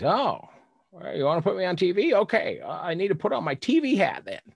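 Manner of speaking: put-on goofy, high, sing-song old-timer voice. Retelling what an old man said at a motorhome door: imitating a goofy old guy. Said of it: "this goofy old guy opens the door and he says".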